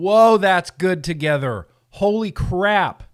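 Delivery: thrilled, loud, drawn-out excited yell. Tasting beers together with viewers, yelling excitedly. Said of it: "Am I yelling too much tonight?".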